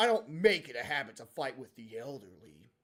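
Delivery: very low, deep, dead serious voice. Imagining the usually whiny character Lion saying this, in a serious voice. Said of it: "imagine Lion with a serious voice".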